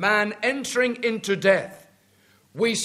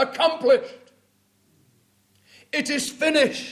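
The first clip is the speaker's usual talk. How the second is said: triumphant, victorious proclamation; 4 semitones higher than usual. A speaker retells the Lord Jesus's cry at his death, retelling a loud triumphant cry. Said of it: "He cries with a loud triumphant voice".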